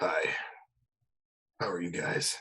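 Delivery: grave, half-whispered, breathy, dead serious tone. Trying out a voice for a super serious character: super serious character voice. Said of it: "I'm trying to do a super serious voice right now".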